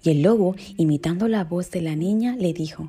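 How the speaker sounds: ordinary delivery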